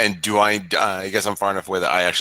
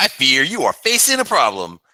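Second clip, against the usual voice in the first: loud, sing-song, jeering mocking tone; 7 semitones higher, 5 dB louder than usual. Planning a taunt at a goblin in character: mocking. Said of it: "And I want to mock him".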